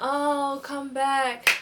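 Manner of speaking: acted, high-pitched, loud sobbing and wailing. Retelling how he ran after you to your car, imitating someone crying.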